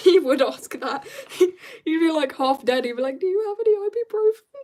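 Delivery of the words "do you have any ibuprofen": squeaky voice shooting up very high. Imagining what a half-dead man with a severed arm would ask: high-pitched voice. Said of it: "Why did my voice go so high?".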